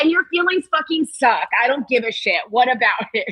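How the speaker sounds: blunt, defiant, unyielding delivery. Retelling a call where Malcolm refuses to back down: imitating Malcolm. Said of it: "And he's like".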